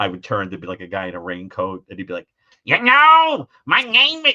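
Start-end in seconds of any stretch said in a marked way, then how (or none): 2.6-4.3 shrill, very loud, high, drawn-out screech. Retelling a stranger on the subway talking: Gilbert Gottfried voice. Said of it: "he would sound just like Gilbert Gottfried".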